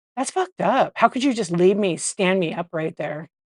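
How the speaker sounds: mock-angry man's cussing outburst. Speaker retells what a cussing man said to them, retelling a pissed-off man. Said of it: "you could tell he was like all pissed off".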